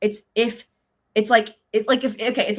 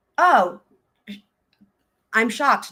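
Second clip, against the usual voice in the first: openly sarcastic, with plainly faked surprise. Commenting on trial testimony about a second offer: sarcastic. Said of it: "this is me being sarcastic".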